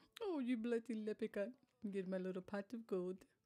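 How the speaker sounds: fake put-on accent that sounds Russian. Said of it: "That's Russian".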